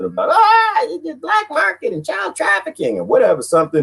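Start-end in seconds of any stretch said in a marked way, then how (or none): 0.3-3.0 shrill, very high-pitched, alarmed ranting yell. Imitating a feared regulator's complaint: imitating Janet Yellen yelling. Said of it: "she'll start to yelling about something".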